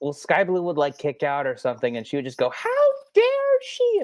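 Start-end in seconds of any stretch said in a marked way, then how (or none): 2.5-4.0 acted outraged shriek, very high, at full volume. Retelling how a woman shouted at Sky Blue, imitate a yell as loud as possible. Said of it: "as loud as she could".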